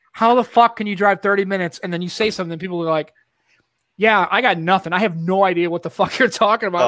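ordinary talk

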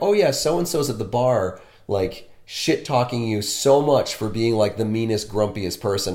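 ordinary delivery

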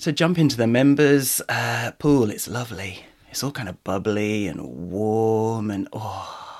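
creepy-sounding delivery. Inviting listeners to join the members pool, in a creepy voice. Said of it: "now you've just made it creepy".

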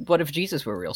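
ordinary delivery

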